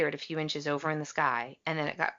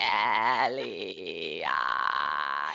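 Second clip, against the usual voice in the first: raspy, creaky, dead-inside voice; 11 semitones lower than usual. Imitating E.T. reaching out: dead inside raspy voice. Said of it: "He's like".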